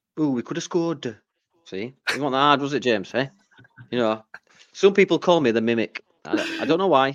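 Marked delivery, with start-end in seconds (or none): 0.2-1.2 mock, put-on Welsh accent. Dared to show how they speak in Wales, speaker does a Welsh accent. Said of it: "Is that how they speak in Wales".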